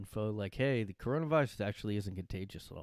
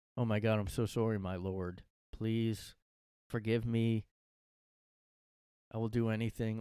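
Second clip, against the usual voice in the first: slow, sarcastic, mocking, over-humble grovelling tone. Retelling a reply to a ban message: imitating a sarcastic reply. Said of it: "responded really sarcastically".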